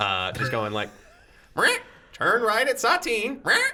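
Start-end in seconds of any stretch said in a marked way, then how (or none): 1.6-3.6 very high, improvised sat-nav voice. Giving directions in a scene while the driver swerves: impromptu GPS voice. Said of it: "doing this impromptu G P S voice".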